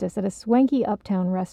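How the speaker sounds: ordinary delivery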